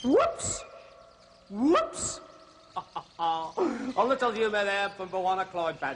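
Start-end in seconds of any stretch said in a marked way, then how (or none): 0.0-2.2 put-on bird-call voice, much higher. A host announces an impression for the audience, then does a mistake bird call impression. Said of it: "I'd like to give you my impression of the mistake bird".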